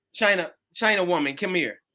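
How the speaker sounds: normal talking voice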